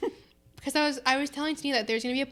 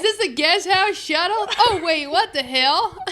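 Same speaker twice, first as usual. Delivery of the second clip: re-enacted scream, higher pitch; 6 semitones higher, 9 dB louder than usual. Retelling a mix-up over an airport guest house shuttle: retelling a scream. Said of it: "I was like so like screamed it".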